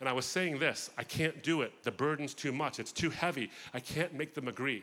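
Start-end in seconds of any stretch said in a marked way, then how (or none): 1.0-4.8 sobbing, crying voice. Retelling own words said while sobbing: imitating own past sobbing. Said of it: "And I began to sob".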